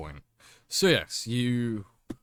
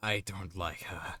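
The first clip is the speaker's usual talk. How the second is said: muttered whisper, lower and quieter; 4 semitones lower, 8 dB quieter than usual. Voicing a character as the others walk off: whispering under his breath. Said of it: "you hear him whisper underneath his breath".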